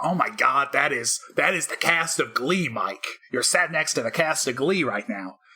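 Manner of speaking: bad, awful, slow fake American accent. Speaker acts out excited people from American TV answering him, awful American accent. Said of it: "That was an awful accent".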